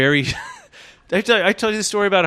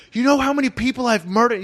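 freaked-out yelling, raised and pitched up; 7 semitones higher than usual. Retelling how a vet came up to them, imitating someone yelling. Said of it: "He's like yelling at us".

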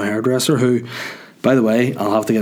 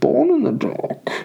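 very high, creaky, rasping villain voice. Showing off impressions, doing a Bane impression. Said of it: "That's a decent Bane".

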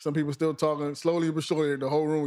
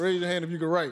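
ordinary delivery

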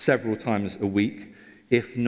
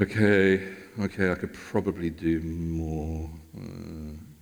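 put-on grudging reluctance through gritted teeth, much lower; 5 semitones lower than usual. Speaker acting out their own eventual grudging reply, mock-reluctant, through gritted teeth. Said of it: "reluctantly through gritted teeth".

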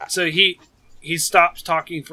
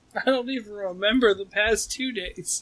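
tearful, hushed, slow voice on the edge of crying; 5 semitones higher, 5 dB quieter than usual. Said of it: "starting to cry".

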